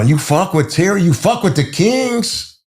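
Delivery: put-on Puerto Rican accent, pitched very high. Retelling what Carlos said when they faced off, imitating Carlos's Puerto Rican accent. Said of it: "He was Puerto Rican with his accent".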